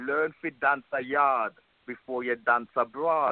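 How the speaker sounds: put-on Jamaican accent, switching into it. Show [name]'s listener how they would say it in Jamaica, in a put-on Jamaican accent. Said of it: "Let me drop a Jamaican accent".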